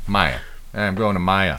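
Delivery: Boston-style pronunciation. On their show, trying out a word in a Boston accent. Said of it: "That sounds more Boston".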